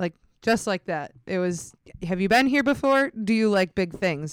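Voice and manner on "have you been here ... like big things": put-on broken English, higher. Retelling what a man asked the group, in imitated broken English. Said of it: "and like broken English".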